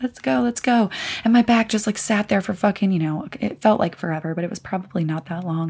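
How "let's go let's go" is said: tearful, impatient, crying voice. Retelling waiting during your bag check, retelling crying impatiently. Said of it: "sitting there crying".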